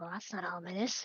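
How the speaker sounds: soft, muttered mumble under the breath. Speaking in character on seeing a cloaked stranger: mumbling under breath. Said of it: "I mumble under my breath".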